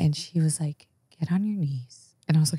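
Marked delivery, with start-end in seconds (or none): 1.2-2.1 calm, soft, even tone, never raised. Retelling what a dominatrix said in an interview: imitating a calm, never-raised voice. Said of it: "She never raised her voice above this".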